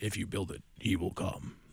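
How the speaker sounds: soft, breathy, mysterious near-whisper like a movie. Talking about a ballpark game, the speaker quotes a movie line as a James Earl Jones impression. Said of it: "I mixed my James Earl Jones".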